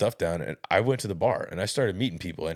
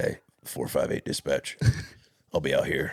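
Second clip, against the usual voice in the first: put-on very low tone, much lower; 5 semitones lower than usual. Retelling a radio call to dispatch while sick, in a very low tone. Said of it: "I really was just very low tone".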